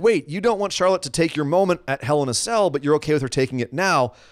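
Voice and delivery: normal talking voice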